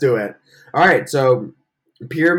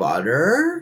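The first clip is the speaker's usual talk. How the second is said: butter with last syllable -ter stressed hard. Recalling how players on Pyramid said words: Pyramid-style stress on butter's last syllable. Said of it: "They always would like emphasize the last syllable of the word".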